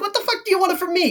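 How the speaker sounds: very high-pitched, fully exaggerated Italian accent. Describing an interrogation scene, quoting the Penguin in stereotypical Italian. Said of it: "he goes like full stereotypical Italian".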